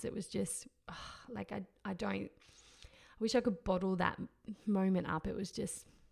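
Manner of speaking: overcome, halting, words catching, breaking up. Recalling the moment of the birth, getting emotional. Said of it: "I'm gonna get emotional, actually".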